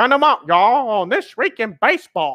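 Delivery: deliberately bad TV announcer voice. Paying tribute to This Week in Baseball: bad Mel Allen impression. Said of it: "bad impersonation".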